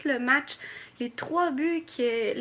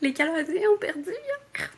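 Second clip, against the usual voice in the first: overly emotional, pitched-up, lamenting delivery; 5 semitones higher than usual. Speaker in mourning over their hockey team's loss, overly emotional. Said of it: "Je l'ai dit trop avec émotion".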